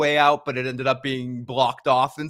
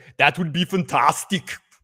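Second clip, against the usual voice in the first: put-on Austrian-style accent. Saying a word the way they hear it in their head, Arnold Schwarzenegger accent. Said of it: "I say it in my head like Arnold Schwarzenegger".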